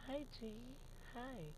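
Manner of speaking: very soft, hushed, breathy, near-whispered voice. Describing a woman, the speaker imitates how she talks: very soft voice. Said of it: "she talks very soft, like".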